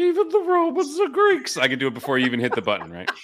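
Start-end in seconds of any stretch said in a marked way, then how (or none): 0.0-1.6 very high-pitched, drawn-out delivery. Imitating a soundbite before a button plays it: impression of a recurring soundbite. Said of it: "a pretty good impression I just did".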